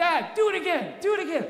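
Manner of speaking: put-on high, squeaky little kid's voice. A dad retells his kids begging from the backseat, doing a kid's voice. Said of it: "the voice would come again".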